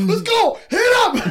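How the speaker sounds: very high, very loud, dragged-out screaming. Retelling watching a match live and screaming at the TV: retelling screaming at the TV. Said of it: "I was screaming at the T V".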